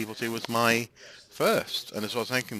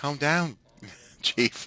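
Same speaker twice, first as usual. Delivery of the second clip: put-on Southern American accent; 4 semitones higher than usual. Retelling a favorite Resident Evil 2 moment as Claire, in a Southern American accent. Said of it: "in a Southern American accent".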